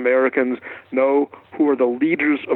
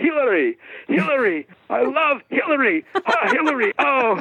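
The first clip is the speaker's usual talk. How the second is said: mock broken English speech, much higher; 12 semitones higher than usual. Retelling how a man reacted to a campaign button, imitating his broken english. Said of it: "this is how he spoke, because he doesn't speak great".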